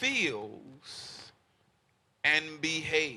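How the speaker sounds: slow, deliberate, drawn-out delivery with long pauses.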